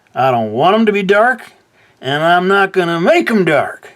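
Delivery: odd put-on Southern accent, very high and loud. Speaker explaining he won't make his other lines dark, weird southern accent. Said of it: "I suddenly went for a weird southern accent there".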